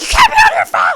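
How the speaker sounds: piercing, shrill, high-pitched shout at full volume. Retelling how someone yelled at them about the phone: imitating someone yelling. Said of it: "someone yells at me like".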